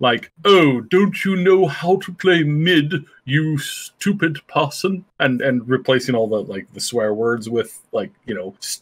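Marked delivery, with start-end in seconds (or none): 0.5-5.0 slow, calm, unruffled, polite British accent. Speaker demonstrates reading a quote for a planned video series, in a calm british voice. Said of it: "but in a calm British voice".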